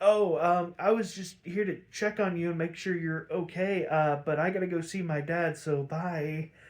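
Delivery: ordinary delivery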